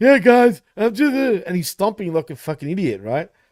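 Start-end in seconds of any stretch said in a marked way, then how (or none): 0.0-1.1 mocking, high, loud wrestler promo voice. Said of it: "like, talking".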